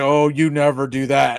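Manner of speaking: low, stunned, shaken voice of horror. Retelling a reaction to a turnover: imitating Tony Romo sounding horrified. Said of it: "sounded like he had just seen someone get run over in traffic".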